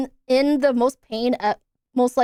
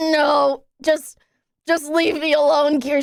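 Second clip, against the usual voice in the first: imitated pained voice, barely able to talk; 2 semitones higher than usual. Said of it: "I can't even talk".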